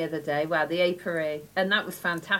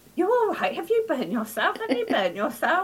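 mock anxious, worried fatherly fussing, swooping; 10 semitones higher than usual. Retelling Dad coming out after hearing screaming: imitating worried dad. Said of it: "he was worrying".

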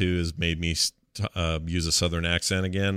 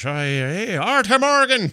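put-on very high-pitched, loud Irish accent; 14 semitones higher, 6 dB louder than usual. Describing a gang member from a game, doing Sean's Irish accent. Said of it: "who's just really Irish".

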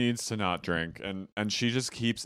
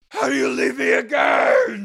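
raspy, shrill drawn-out scream, very high and very loud; 12 dB louder than usual. Retelling a reality show fight: imitating Jen screaming. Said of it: "are screaming at this woman".

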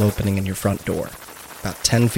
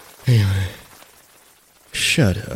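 barely awake, drowsy, groggy voice. Game master voicing a character just woken up, groggy. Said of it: "still got groggy eyes and a little bit of drool".

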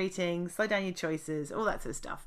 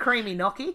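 put-on Australian accent; 3 semitones higher, 4 dB louder than usual. Joking about a drag name, a speaker says a dish name in an australian accent. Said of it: "You have to say it in an Australian accent too".

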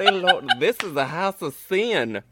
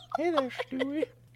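put-on soft, high, lecherous, creepy old man voice; 8 semitones higher, 9 dB quieter than usual. After recalling the character's name, a speaker tries a Herbert from Family Guy impression. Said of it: "Herbert the pervert from Family Guy".

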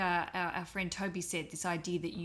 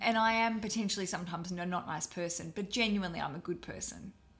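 ordinary talk, nothing marked

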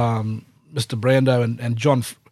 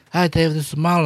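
put-on lisping accent, higher pitch; 4 semitones higher than usual. Acting out Marlon introducing himself to David by phone, in a Godfather accent with a little lisp. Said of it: "He's got this sort of like Godfather accent, but he's got this little lisp".

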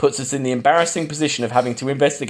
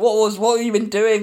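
angry yell, higher pitch; 9 semitones higher than usual. Retelling a film scene where Quatermass throws the doctor out: imitating Quatermass yelling. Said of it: "yelling at him".

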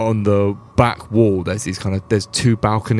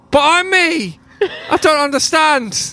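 very high, slow, baffled, bewildered voice; 5 dB louder than usual. Voicing a guard who hears his own voice copied: confused guard voice. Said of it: "he's getting a bit confused".

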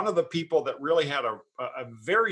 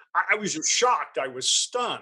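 normal talking voice

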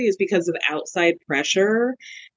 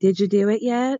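put-on voice, as creepy as possible. Recounting a FaceTime call, the speaker quotes Squeaky; imitating Squeaky's creepy voice. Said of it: "she puts on the creepiest voice".

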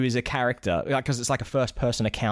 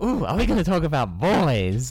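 very excited, swooping sing-song voice with a gasp; 3 semitones higher, 4 dB louder than usual. Retelling how the other speaker reacted last time: imitating someone excited. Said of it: "you are always so excited".

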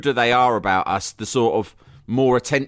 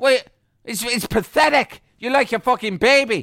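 put-on furious ranting voice, higher pitch; 11 semitones higher than usual. Pretending to rant at a vomiting baby: Roy Keane rant. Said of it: "I would be full Roy Keane".

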